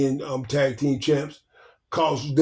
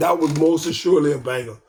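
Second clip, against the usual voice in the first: plain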